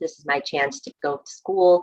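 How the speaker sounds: usual speaking voice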